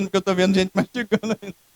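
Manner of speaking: talking while laughing, words riding on chuckles. Explaining to the congregation why they are laughing: laughing while talking. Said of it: "Eu tô rindo".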